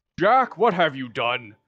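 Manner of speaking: loud booming voice. Retelling how Santa Claus walked in and spoke to Jack, booming Santa Claus voice. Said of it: "with like a booming voice says".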